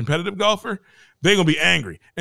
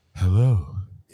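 low, put-on, most sultry delivery possible; 9 semitones lower than usual. Retelling a coworker's voicemail greeting, imitating a sultry voice. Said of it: "she did the most sultry".

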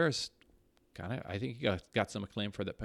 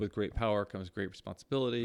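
ordinary delivery

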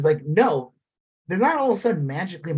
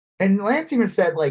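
plain

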